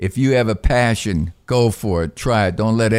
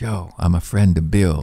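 put-on whisper, lower pitch; 4 semitones lower than usual. Retelling how people come over after aa: imitating someone whispering. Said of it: "they kinda whisper".

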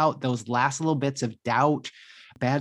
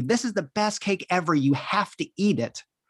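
mock light, mild, pitched-up yell; 5 semitones higher than usual. Describing a stranger shoving cake in their face: imitating someone yelling. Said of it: "yelled at me".

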